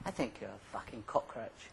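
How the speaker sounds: put-on tender, caring, very kind tone. Retelling what the therapist said to a client: imitating a therapist's kindest voice. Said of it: "in his kindest voice he said".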